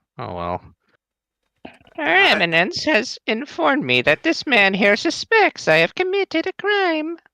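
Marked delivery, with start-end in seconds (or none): 2.0-7.2 very high put-on old lady voice. Voicing a game character who has never had a voice: old lady voice. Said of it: "who can sound like an old lady better".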